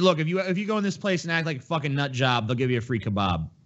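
plain

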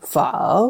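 pho with a rising, question-like tone. Explaining the Vietnamese question-mark tone mark: rising question tone on pho. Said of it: "think of it as an interrogative, a question".

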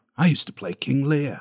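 mournful voice full of regret. Quoting Hoskins on a past role: imitating Hoskins's mournful regret. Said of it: "the actual sense of, like, mourning and regret in his voice where he's like".

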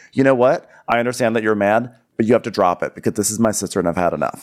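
ordinary talk

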